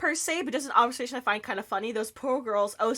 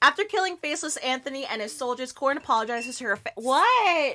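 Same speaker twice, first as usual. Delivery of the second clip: ordinary talk, nothing marked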